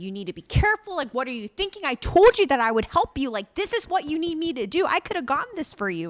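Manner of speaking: put-on screaming. Recapping a scene where a man pulls a woman out, imitating someone screaming. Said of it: "he's like screaming at her".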